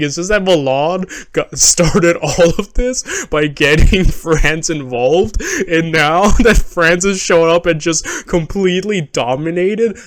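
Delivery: amused speech laced with laughter. Explaining history and apologizing for laughing, laughing while talking. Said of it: "I apologize that I'm laughing".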